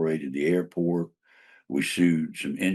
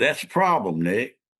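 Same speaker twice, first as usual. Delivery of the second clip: put-on Southern accent, pitched up; 6 semitones higher than usual. Retelling his exchange with Hugh, imitating Hugh's Southern accent. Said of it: "that Southern accent".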